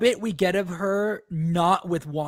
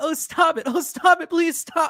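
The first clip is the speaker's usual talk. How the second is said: very high pleading tone through laughter; 9 semitones higher than usual. Retelling a character who laughs while begging: imitating laughing while begging. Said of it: "like she's begging her".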